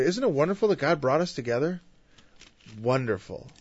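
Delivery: mock, heavily laid-on-thick sarcastic tone. Retelling what a couple who met in church says, imitating heavy sarcasm. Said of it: "There's a heavy dose of sarcasm in that".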